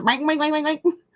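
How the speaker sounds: soft, high, pig-like squealing voice. Speaker tries to copy what Kate says in something watched: pig-like imitation of Kate. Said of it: "That makes me sound like a pig".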